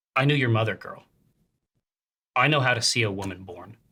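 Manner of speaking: firm, stern delivery. Guiding a listener through a story, the speaker voices a woman speaking to a girl: stern voice. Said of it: "With a, a stern voice. Uh, she says".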